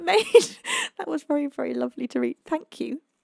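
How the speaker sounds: voice catching with tears. Thanking someone for a lovely message they shared, choking up with tears. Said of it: "There's so many tears just came to my eyes".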